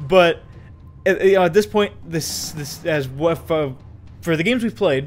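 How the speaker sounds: halting, stammering, tripping over words. Explaining to listeners, the speaker is stammering. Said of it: "Sorry, I'm stammering here".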